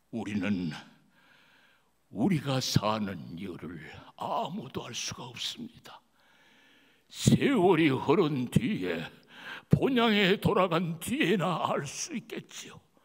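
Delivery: dramatic, theatrical monologue voice. Performing a monologue, showing only the voice acting, as Jacob. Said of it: "목소리 연기만 보여드리겠습니다".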